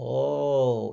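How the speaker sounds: put-on creaky Russian-accented oh.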